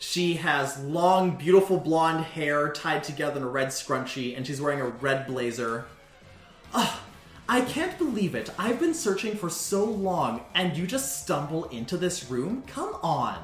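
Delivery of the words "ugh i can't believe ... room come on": woman's voice with pitch swooping around. Voicing a woman heard from down the hall: Heather's woman's voice. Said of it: "It's a woman's voice".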